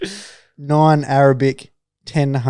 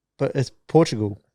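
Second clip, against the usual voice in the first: normal talking voice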